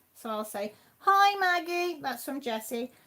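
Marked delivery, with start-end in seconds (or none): 1.0-2.0 very high, loud, put-on voice. Passing on a greeting from Jessie to Maggie: imitating Jessie. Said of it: "that was my imitation of them".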